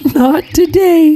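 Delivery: giggling, very high. Narrator reads the daughter's reply to her father Ivan, giggling. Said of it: "she giggled".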